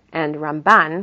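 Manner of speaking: Ramban, weight on second syllable ban. Contrasting Rambam and Ramban, stress on BAN in Ramban. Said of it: "And Ramban, it's the second part of the name".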